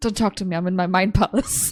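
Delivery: snapping, very snappy, curt delivery. In character, cutting off the others who complained about the silence: snappy voice. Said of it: "in a very uh, uh, snappy voice".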